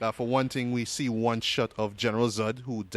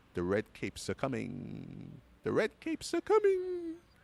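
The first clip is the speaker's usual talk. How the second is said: mock strange, sinister, ominous, swooping line reading; 5 dB quieter than usual. Quoting a trailer line in a weird, ominous Lex Luthor voice. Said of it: "in this sort of weird, kinda ominous kinda way".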